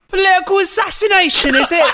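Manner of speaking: imitated London accent. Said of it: "It just sounds like he's from London".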